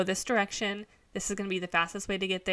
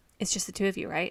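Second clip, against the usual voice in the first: mock shady whispered tone. Retelling how an employee asked a question: imitating a shady drug-dealer tone. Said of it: "he leans in, he goes".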